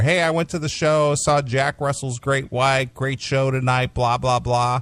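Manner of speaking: ordinary talk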